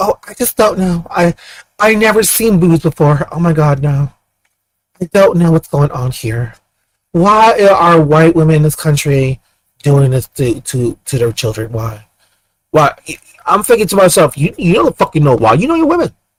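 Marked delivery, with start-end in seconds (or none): 0.0-12.9 slow, feigned, mock clueless innocence. Mocking a group by acting out their claimed confusion: mock clueless innocence. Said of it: "They act like a bunch of virgins, like".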